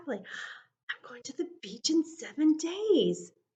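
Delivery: cheerful, pleased tone. Showing how a sentence with a smiley face should be read, in a happy tone. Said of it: "He's saying it happily".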